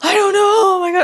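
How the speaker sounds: high, loud flustered panic.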